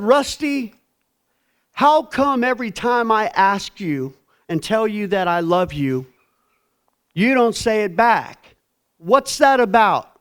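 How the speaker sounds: heated, very high voice. Retelling asking someone why he never says it back: retelling own heated demand. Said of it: "I was hot".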